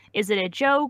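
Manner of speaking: ordinary talk, nothing marked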